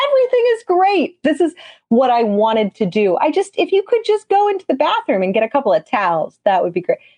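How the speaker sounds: mock, high, swooping, over-the-top cheerfulness. Retelling asking a child for towels while bleeding: imitating own hyper happiness. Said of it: "hyper happiness even more".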